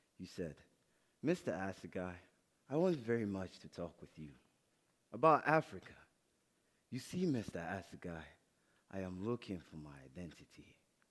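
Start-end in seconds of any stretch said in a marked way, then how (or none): 1.3-10.8 mock-solemn, very serious, earnest delivery. Reminding someone how they spoke at their first school meeting, mimicking earnest seriousness. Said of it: "the most serious little thing I had ever seen".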